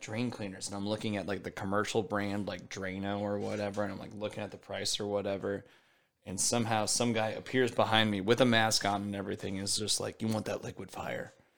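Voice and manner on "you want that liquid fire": theatrical, dramatic hushed whisper. Retelling a masked guy offering drain cleaner: imitating a dramatic whisper. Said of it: "Was he whispering this whole time?".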